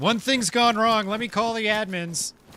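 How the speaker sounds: mock sarcastic jab, pitched very high. Mocking players who file many tickets after short sessions, sarcastic mockery of others. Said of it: "That that's me being sarcastic".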